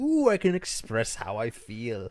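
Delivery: loud, swooping, put-on German accent. Talking about a horrible film character, trying out a put-on German accent. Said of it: "That's my German accent".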